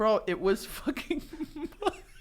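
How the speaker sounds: words blubbered through tears, crying. Ranting about a disappointing meal until the other speaker asks if they're crying; crying while talking. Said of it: "Are you crying?".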